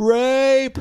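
play-acted piercing, very high scream, held long. Retelling what a woman did outside: imitating someone screaming. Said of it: "then she started screaming".

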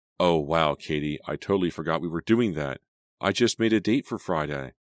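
ordinary delivery

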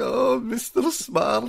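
very high, creaky, cracking emotional cry. Imitating how the character sounds when he gets emotional: emotional Bernie Kopell Get Smart voice. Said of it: "when he gets emotional, he's like".

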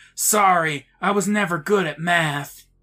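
loud, high-pitched stage whisper. Reading a story aloud, voicing the ghost's line: loud ghost whisper. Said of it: "the ghost whispers loudly".

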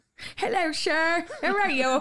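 put-on English accent, badly done, high and loud. Asked to show an english accent, greeting someone in a bad english accent. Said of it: "Did you show him your English accent?".

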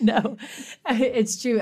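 loud, high-pitched laughing voice.

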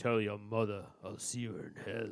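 hushed, very quiet, put-on tough-guy movie star voice. Taking a turn performing a movie line, doing an action movie star impression. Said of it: "Is that Schwarzenegger?".

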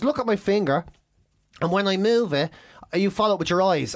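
ordinary delivery

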